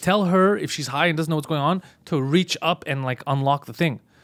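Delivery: normal talking voice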